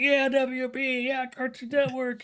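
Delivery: very high, shrill, stretched-out, drawn-out shriek. Imagining a reaction to a studio announcement: pretend screaming. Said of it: "We could be just screaming like".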